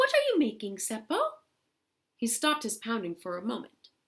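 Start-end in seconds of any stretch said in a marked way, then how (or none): 0.0-1.2 sweet, tiny, very high voice. Narrator reading Louhi, now a hawk, asking Seppo a question, in a pretty little voice. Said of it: "she asked in a pretty little voice".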